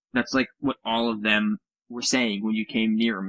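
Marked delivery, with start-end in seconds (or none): none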